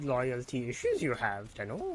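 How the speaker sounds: swooping, sing-song creature voice, pitch swinging up and down. Imitating a game character's line, which turns into a Yoda voice. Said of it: "my impression of him turned into Yoda".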